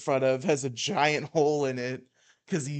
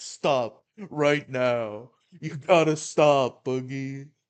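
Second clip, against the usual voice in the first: put-on mock-concerned voice. Mocking a man's show of concern over Boogie: mock-concerned Keemstar impression. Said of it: "here's concerned Keemstar".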